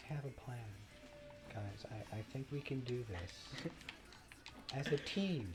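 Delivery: very soft-spoken, breathy, near whisper. Retelling a game scene, the speaker voices Spyro in Elijah Wood's soft-spoken voice. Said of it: "in Elijah Wood's very soft-spoken voice".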